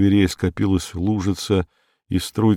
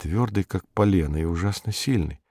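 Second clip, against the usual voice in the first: ordinary delivery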